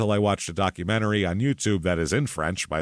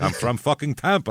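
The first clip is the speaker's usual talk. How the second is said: put-on angry outburst; 6 semitones higher than usual. Retelling a man's reply when people laughed at where he's from: retelling an angry retort. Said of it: "And he'd be all mad".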